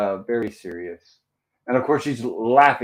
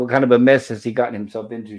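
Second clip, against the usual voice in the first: ordinary delivery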